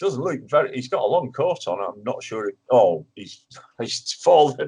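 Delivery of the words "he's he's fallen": slow, laughing through the words. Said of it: "Sorry, I shouldn't laugh".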